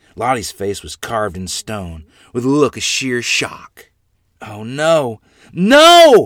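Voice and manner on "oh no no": very loud, high, long swooping scream on "no". Watching a woman swept away in churning water, the narrator screams. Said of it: "I screamed".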